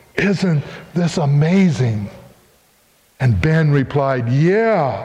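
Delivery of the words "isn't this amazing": put-on trembling, shaky whisper. Retelling what a mother said to her son, retelling a trembling whisper. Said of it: "with her voice just trembling and in a whisper".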